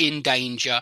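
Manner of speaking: ordinary talk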